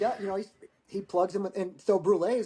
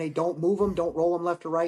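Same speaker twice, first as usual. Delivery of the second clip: ordinary talk, nothing marked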